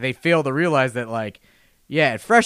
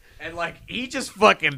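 plain

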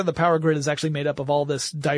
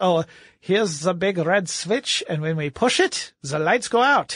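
put-on slow German mad-scientist accent; 3 semitones higher than usual. Discussing vulnerable targets, the speaker slips into a German mad scientist accent. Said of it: "I don't know why I went German".

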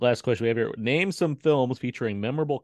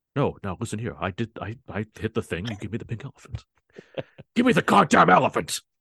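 put-on angry movie-star voice. Friends discussing a movie, one imitating its star: angry Liam Neeson impression. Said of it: "That's a good mad Neeson".

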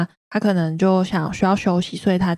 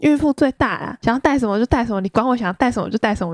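acted, angry, cross yelling outburst; 5 semitones higher than usual. Retelling yelling at the man carrying the luggage: imitating own past yelling. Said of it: "我就对他大吼大叫".

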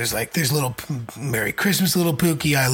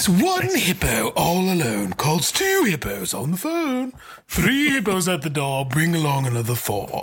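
put-on English accent with sing-song tune; 4 semitones higher than usual. Showing how they always read a book to him, in an English accent. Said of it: "I always read it like this. He's an English guy".

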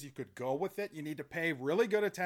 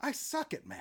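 very soft whisper under the breath; 7 semitones higher, 13 dB quieter than usual. Recounting a scene, quoting a character who whispers under his breath. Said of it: "He like whispers under his breath".

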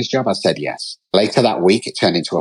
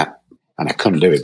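ordinary talk

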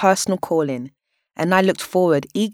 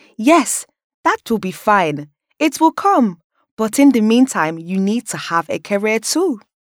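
put-on Nigerian accent, pitched up; 6 semitones higher, 4 dB louder than usual. Retelling what the speaker's mum would laugh and say, in a Nigerian accent. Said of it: "say in her Nigerian accent".

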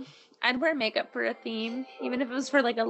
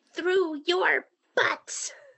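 put-on high, repeated toddler-like hollering yell; 7 semitones higher than usual. Retelling a potty-training little boy in a bathroom: imitating a child yelling. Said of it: "he just kept yelling".

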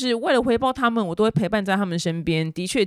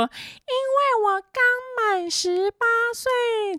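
gross put-on baby voice, very high, very slow. Imitating a girl interviewed on the street in a viral video, in an extremely sickening baby-doll voice. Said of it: "她用一个极恶心的娃娃音".

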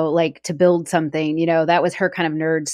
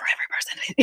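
put-on whisper, quieter. Retelling a show scene, quoting what he said: imitating a whisper. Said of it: "He, like, whispered".

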